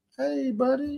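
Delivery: very high-pitched, soft, cheery, chummy, jolly voice. Retelling how a guy came in and greeted someone, imitating a jolly greeting. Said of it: "dude came in there jolly".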